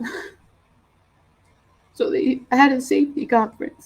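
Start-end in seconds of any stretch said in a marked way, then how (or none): 1.9-3.9 high, choked-up voice, close to tears. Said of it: "I'm choking up a little bit".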